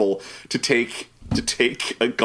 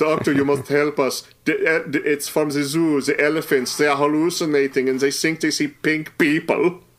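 bad put-on German accent, higher; 5 semitones higher than usual. Retelling a scene where Janet phones the doctor, Janet's bad German accent. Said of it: "it's Janet with a bad German accent".

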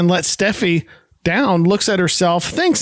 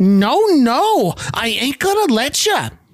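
firm, high, slow voice; 5 semitones higher than usual. Retelling how Edith refuses to let Archie up the stairs: imitating Edith shouting. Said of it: "nay, shouting".

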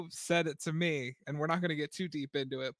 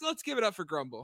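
usual speaking voice

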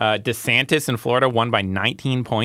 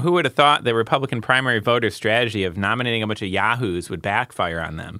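ordinary talk, nothing marked

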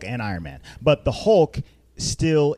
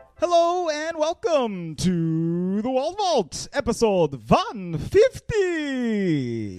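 put-on Transylvanian count accent; 8 semitones higher than usual. Podcast host opening the new episode, doing the Count voice. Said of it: "Sounds like you're from Transylvania".

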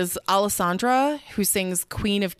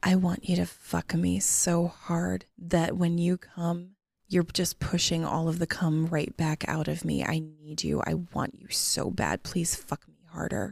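sexy, sultry voice, lower and quieter; 3 semitones lower, 4 dB quieter than usual. Showing the other speaker how the line should sound, in a sexy voice. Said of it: "You need to do it more like".

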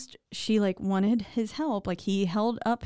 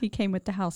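usual speaking voice

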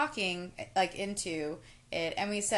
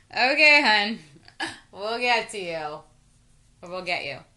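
put-on drunk man voice, louder; 8 dB louder than usual. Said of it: "a man who sounded very drunk saying".

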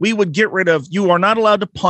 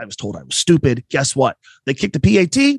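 ordinary delivery

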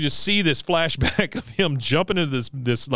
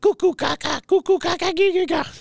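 put-on odd baby talk at a much higher pitch. Retelling a scene where Cotton picks up a crying baby, doing Cotton's weird baby talk. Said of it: "Just the weirdest baby talk I've ever heard".

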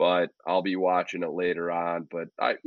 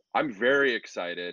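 dry, sarcastic tone; 2 semitones higher than usual. Talking about an upcoming fall camp-out with a daughter, sarcastic. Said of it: "I hope this sarcasm is coming through".

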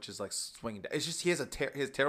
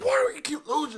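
furious, angry yell, very high and very loud; 9 dB louder than usual. Speaker retells an adult who keeps losing the game, imitating his anger. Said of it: "He's like getting so angry".

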